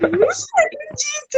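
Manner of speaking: high, astonished disbelief. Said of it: "eu fiquei tipo".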